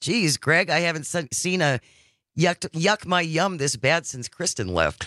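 ordinary talk

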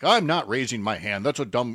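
ordinary talk, nothing marked

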